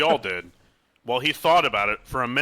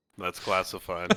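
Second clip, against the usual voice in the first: put-on smirking, smug tone, lower and quieter; 6 semitones lower, 7 dB quieter than usual. Retelling how a man answered when asked what he does, imitating a smirking reply. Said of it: "Why'd he say it like that? It sound- like he was like smirking".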